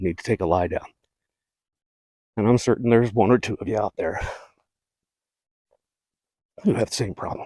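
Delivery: huffing and puffing, out of breath. Speaker on a trail, apologizing to listeners, huffing and puffing. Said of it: "Sorry I'm huffing and puffing so much".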